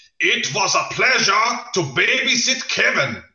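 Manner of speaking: put-on loud, very high, aggressive, in-your-face German accent. Describing a comedy bit of Germans saying nice things, aggressive German accent. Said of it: "this sort of aggressive German accent".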